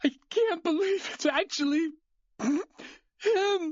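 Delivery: tearful sob-talk, pitched very high. Reacting to a victim at a crime scene, crying while talking. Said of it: "are you crying?".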